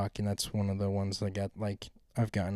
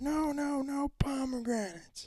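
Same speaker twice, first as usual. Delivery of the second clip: very high, slow, drawn-out freaking-out voice. Retelling a teacher's reaction in a video: imitating a teacher freaking out. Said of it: "freaking out".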